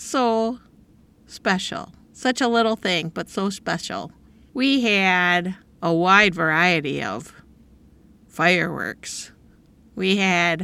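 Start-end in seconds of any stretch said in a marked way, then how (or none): 4.5-10.6 tongue-in-cheek, sarcastic delivery. Describing the fireworks they had at home, sarcastic. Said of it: "and I'm being sarcastic".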